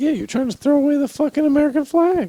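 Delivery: voice jumping very high, accusing tone. During an argument about crossing two flags, speaking in a high-pitched voice. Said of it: "Why did I say that in a high pitched voice?".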